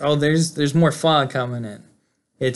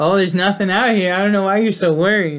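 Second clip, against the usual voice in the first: pitched-up, mocking, needling, teasing taunt; 5 semitones higher, 4 dB louder than usual. Retelling a scene: a man on the phone after opening the door, retelling a taunt. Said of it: "So he's still like kind of taunting".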